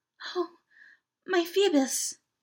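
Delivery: low-toned, soft, hushed, repeated under-the-breath murmur. Reading a novel aloud, a woman repeats a name after the priest speaks, in a low tone. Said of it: "she repeated in a low tone".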